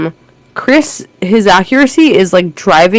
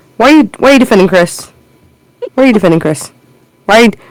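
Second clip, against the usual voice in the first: comedic, joking mock-interrogating tone; 3 semitones higher than usual. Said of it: "hold the club up comedically. I'm not gonna be serious".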